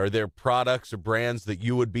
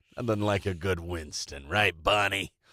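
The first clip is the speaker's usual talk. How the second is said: low-pitched cartoon caveman voice; 4 semitones lower than usual. Recounting a 1961 Flintstones cigarette ad, in a Fred Flintstone voice. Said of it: "That's not a bad Fred voice there".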